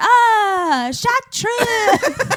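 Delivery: put-on very high, loud, old-timey movie voice. Imitating how another speaker just said a word: old-timey movie voice. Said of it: "like some old timey movie".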